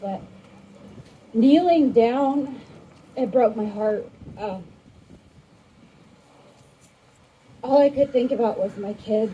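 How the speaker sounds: shaky, trembling, nervous voice. A nervous speaker shares thoughts at an open mic, in a shaky nervous voice. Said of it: "My voice is shaky".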